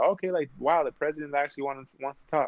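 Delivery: ordinary delivery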